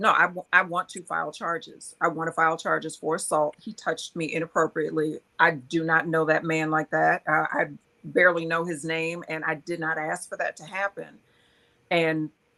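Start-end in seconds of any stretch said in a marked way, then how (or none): none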